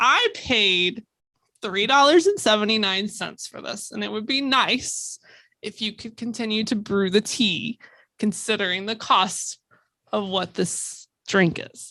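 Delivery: very calm, polite, measured, courteous, even tone. Recounting going back over to complain, retelling speaking very calmly. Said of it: "I very calmly said".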